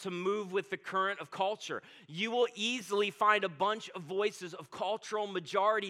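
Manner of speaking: plain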